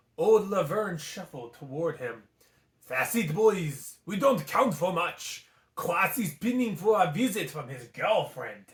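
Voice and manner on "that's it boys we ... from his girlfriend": put-on French accent. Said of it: "we're going with the French accent today".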